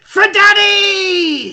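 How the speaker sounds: very high-pitched, breathless, gasping battle-cry yell. Voicing a dying creature that gasps and then charges: gasping battle cry. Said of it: "it's gasping".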